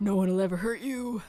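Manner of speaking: put-on deep, low, protective man's voice. Retelling what he said while grabbing Anne, imitating his deep voice. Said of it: "in his like deep voice".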